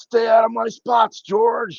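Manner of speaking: very high, drawn-out holler. Telling clients on the boat what a passing captain yells: imitating Eddie Caldwell yelling. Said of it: "he's gonna yell out".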